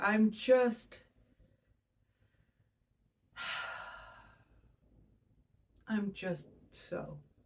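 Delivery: slow sigh out on a long, deep exhale. Showing the Sagittarius energy of release: sighing with a deep exhale. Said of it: "put more emphasis on the sigh and the deep breath and the exhale".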